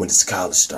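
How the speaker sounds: gruff grunting voice. Retelling a scene where Norman questions his son Harry, grunty Norman voice. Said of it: "grunty voice".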